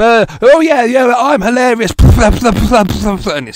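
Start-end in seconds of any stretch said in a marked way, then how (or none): 0.0-1.9 put-on very loud voice, much higher. Mocking a loud comedian who has no pop filter, imitating a very loud voice. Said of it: "who has a very loud voice".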